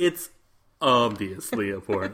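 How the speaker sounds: voice sunk octaves, slow, deep dude voice. Imitating the other speaker's line in a mock deep voice. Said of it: "you're like".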